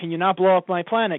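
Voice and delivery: ordinary delivery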